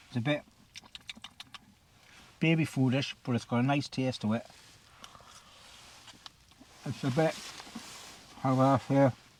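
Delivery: speech muffled by a full mouth. Tasting a curry-flavoured food, talking with mouth full. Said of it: "so I talk my mouthful there".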